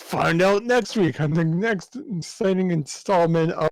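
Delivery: cartoon announcer voice. The speaker deliberately switches into an old-school Saturday morning cartoon announcer voice. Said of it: "like the old school Saturday Saturday morning cartoon announcer voice right now".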